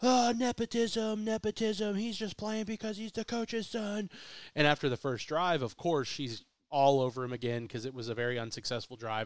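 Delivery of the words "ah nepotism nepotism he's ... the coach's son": put-on scream, higher. Retelling what a woman in the crowd shouted: imitating a woman screaming. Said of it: "she starts screaming, this lady".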